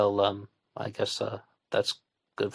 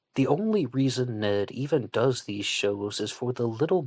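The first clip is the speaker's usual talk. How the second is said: usual speaking voice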